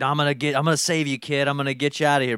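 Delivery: put-on grumpy old man voice. Retelling a childhood movie idea, imitating Jack Lemmon. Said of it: "Jack Lemmon was like".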